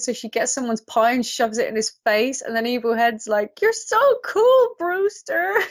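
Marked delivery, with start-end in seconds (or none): 3.6-5.5 ridiculously high, energetic, thrilled, excited gushing. Retelling a scene, imitating Evil Head's excited voice. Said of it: "so ridiculously high and energetic and excited".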